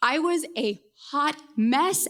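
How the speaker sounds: slow delivery with "mess" stressed. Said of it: "emphasis on mess".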